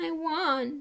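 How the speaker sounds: trembling, high voice with "wand" drawn out. After a crash, a passenger answers his friend who asks if he's okay, shaky voice. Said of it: "said Ron in a shaky voice".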